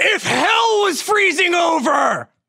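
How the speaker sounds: high, swooping, drawn-out wrestler drawl. Acting out a reply about a jacket in a bit: Macho Man Savage voice. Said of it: "a Macho Man Savage voice?".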